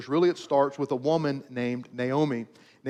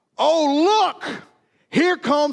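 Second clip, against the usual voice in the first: high, very slow, begrudging, resentful acted sneer; 13 semitones higher, 7 dB louder than usual. Retelling what the older brothers said to one another: mock-resentful tone. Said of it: "through the lens of resentment".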